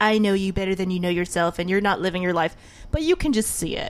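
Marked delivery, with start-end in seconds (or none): none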